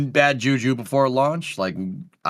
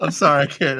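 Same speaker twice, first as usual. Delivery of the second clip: talking through stifled laughter. Reacting to a joke about a chair on the stream, laughing while talking. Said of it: "I'm trying not to laugh".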